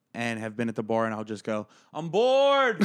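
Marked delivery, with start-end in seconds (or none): 1.9-2.8 put-on drunk voice, higher and louder. Retelling a drunk complaint to a stranger at a bar: imitating own drunk self. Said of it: "I've been drunk talking to a stranger".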